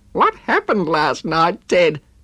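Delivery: high spluttering, words tumbling out. Narrator reads a woman questioning a man who just appeared, spluttering. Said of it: "Diane spluttered".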